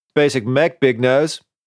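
high, jeering yelled voice. Risto yells at the narrator in his mecha, after others call out: yelled. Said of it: "yelled Risto".

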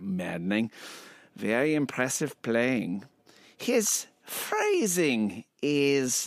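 put-on swinging, swooping German accent. Voicing Kriegel, a man from Vienna, giving his comments in a German accent. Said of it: "so I get to do my German accent again".

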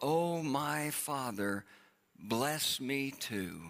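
slow, drawn-out begging plea.

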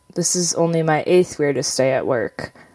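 plain

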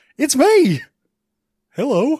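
loud, swooping, bouncy, animated put-on movie-guy voice. Joking about a nude Blart, doing a Paul Blart impression. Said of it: "Is that your Paul Blart impression?".

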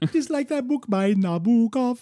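silly high reggae voice. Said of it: "he says it in that dumb reggae voice".

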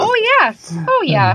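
put-on Minnesota accent. Asked whether it happens to her, [name] answers in a Minnesota accent. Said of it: "I said that in my Minnesota voice".

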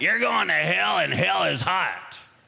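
rough, creaky, heavy smoker's voice. Retelling what a Sunday school teacher said, imitating a voice like a heavy smoker. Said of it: "She talked like a man who smoked a lot of cigarettes".

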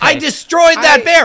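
acted panicked shouting. Acting out a character's freaked-out lines, imitating John Arbuckle shouting. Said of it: "do you have to shout so much?".

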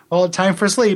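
ordinary talk, nothing marked

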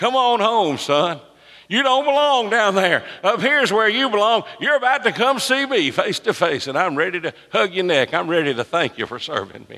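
cheering, encouraging, welcoming voice. Retelling a Bible scene to listeners, calling Stephen home: imitating Jesus cheering. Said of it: "He was cheering Stephen".

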